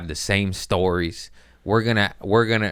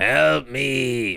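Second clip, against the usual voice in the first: high, creaky, raspy voice; 5 semitones higher than usual. Retelling a heckler who sounded like Zelda: Zelda from Pet Sematary voice. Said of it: "I said she sounded like Zelda from".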